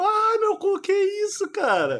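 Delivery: mock, high, yelping cry of pain. Retelling someone screaming while getting tattooed; retelling a pain scream. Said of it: "E ela gritando".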